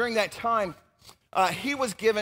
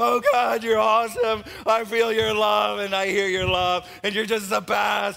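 mock weepy, tearful voice, crying; 6 dB louder than usual. Retelling a seminar where everyone cried: imitating tearful praying. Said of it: "we were crying and going".

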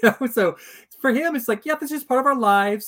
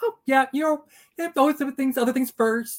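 mock casual, offhand, blasé, matter-of-fact tone; 3 semitones higher than usual. Describing a scene where a man delivers serious news, imitating his blasé tone. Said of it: "he's so blase about it".

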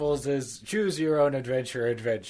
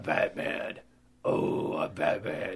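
death metal growl voice, lower and quieter; 10 semitones lower, 4 dB quieter than usual.

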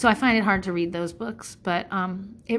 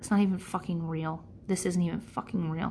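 mock petulant-teenager muttering under breath, quieter; 2 semitones lower, 6 dB quieter than usual. Retelling your remark while parents screamed at a kid's soccer game, muttering under your breath. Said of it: "under my breath, like a petulant teenager".

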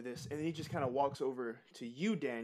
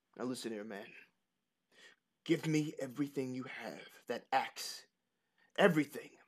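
demanding bandit outlaw voice. Voicing an outlaw pointing a spear at a player's neck: outlaw demanding at spearpoint. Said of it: "he points that spear directly at your neck".

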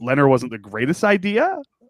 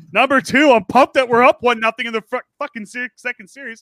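fired up, worked up, slower; 11 semitones higher, 5 dB louder than usual. Speaker runs through a numbered list to a buddy, fired up. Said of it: "I'm fired up tonight".

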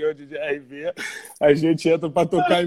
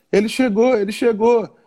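high, shrieking shout in a put-on girl voice; 6 semitones higher, 3 dB louder than usual. Retelling a girl running toward them at a show: imitating a girl shouting. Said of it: "já gritando".

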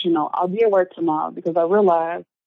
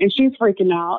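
ordinary talk

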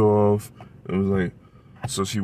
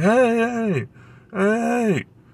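mock full-volume scream, much higher, slower; 13 semitones higher than usual. Retelling how an ex-mother-in-law reacts when a door is closed on her, imitating a top-of-lungs scream. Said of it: "she'll be screaming at the top of her lungs".

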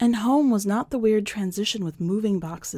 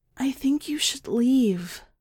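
firm stage whisper, pitched up; 5 semitones higher than usual. Narrator reads the building's line to the crows, firm low half-whisper. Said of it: "voice firm though low".

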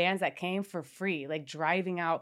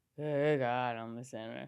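mock drunken slurring, lower and quieter; 6 semitones lower, 5 dB quieter than usual. Retelling a voice memo recorded blacked out: imitating own drunk voice. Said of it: "drunken ass voice".

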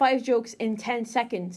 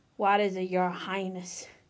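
mocking, derisive tone, lower; 3 semitones lower than usual. A character answers the dark lady, mocking. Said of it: "yeah in a mockingly way".

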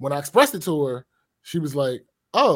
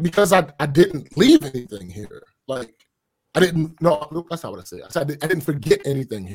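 usual speaking voice

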